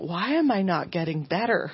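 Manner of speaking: imitated near-tearful, almost crying voice. Retelling asking a chiropractor why nothing is improving: retelling being almost in tears. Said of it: "almost in tears".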